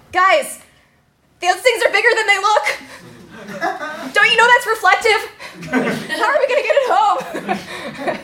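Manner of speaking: very high, drawn-out, freaked-out shouting. Retelling yelling out a car window at friends: imitating own past yelling. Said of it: "yelling out the window".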